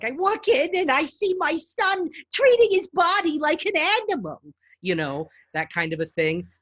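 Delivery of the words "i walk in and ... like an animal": put-on shrill, very high elderly mother character voice. Demonstrating the women's voices they can do: old mother character voice. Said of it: "old mother characters, where she's like".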